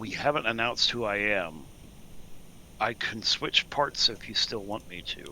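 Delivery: lowest possible whisper. Telling companions quietly who they have not announced: lowest possible whisper. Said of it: "in my lowest possible whisper".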